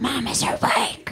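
loud whisper, made to carry like a stage whisper. Retelling how the dog whispers too loudly: imitating a loud whisper. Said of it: "He whispers it so loud".

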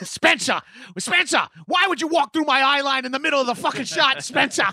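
put-on British accent, flipping out, ranting furiously. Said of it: "trying to do a British accent of him flipping out".

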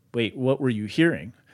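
ordinary talk

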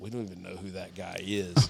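soft whispered aside. Speaker recounts what a worker said once the supervisor walked off, retelling a whisper. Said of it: "one of them kind of – whispered".

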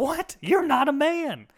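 put-on very high, swooping, loud Southern kid voice. Speaker retells what a kid said to him growing up: put-on southern accent. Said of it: "I'm going to give him a Southern accent".

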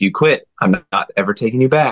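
grave, no-nonsense, dead serious teacher voice. Retelling a piano teacher's warning about quitting lessons: imitating a very serious teacher. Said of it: "a very serious teacher".

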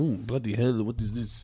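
put-on speaking with Albanian accent. Retelling what a man said about the wing, imitating an Albanian accent. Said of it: "in his Albanian accent".

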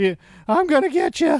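cartoon voice, very high-pitched and loud. Retelling a movie character's line to another speaker: Simpson voice. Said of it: "I broke into Simpson's voice on that one".

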